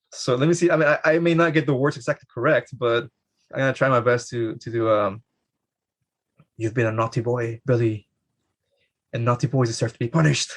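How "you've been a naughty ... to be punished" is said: creepy, menacing, scolding voice. Acting out the moment before Billy's punishment at the orphanage: creepy nun voice. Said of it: "That was a creepy nun".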